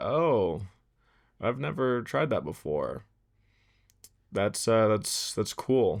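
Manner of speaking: dry, uninterested tone. Retelling what the film lab worker said to him, monotone voice. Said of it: "in the most like monotone voice".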